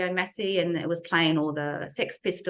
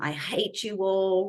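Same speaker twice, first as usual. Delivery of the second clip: loud, bellowed, acted-out outburst; 3 semitones higher than usual. Retelling how the father yelled at his children at dinner: imitating someone yelling. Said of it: "and he's yelled out".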